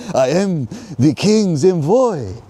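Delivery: fake French accent, very high, slow and drawn-out. Quoting the king's envoy in a story, put-on French accent. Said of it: "that's my best French accent".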